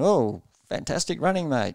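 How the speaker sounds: high-pitched, cheering, encouraging yell. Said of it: "yelling at you going".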